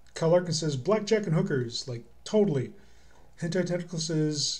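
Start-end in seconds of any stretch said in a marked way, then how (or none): none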